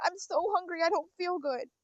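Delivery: desperate, begging, pleading tone. Retelling how staff tried to kick out a hungry man: imitating someone pleading. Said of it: "The guy was just pleading".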